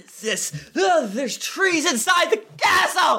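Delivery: agitated shouting. Reacting to trees inside a castle in a game scene: upset yelling. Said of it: "Harper, calm down".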